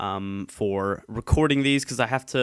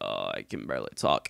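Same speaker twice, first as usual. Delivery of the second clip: put-on congested sick voice, rough, croaky and creaky; 8 dB quieter than usual. Describing someone whose throat still hurts: imitating a stuffed-up sick voice. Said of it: "super sick sounding".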